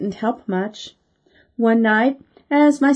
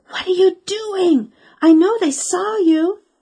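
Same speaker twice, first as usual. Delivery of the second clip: cross, annoyed stage whisper; 8 semitones higher than usual. Speaking to a sister after the visitors close the door: loud whisper. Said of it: "I said in a loud whisper".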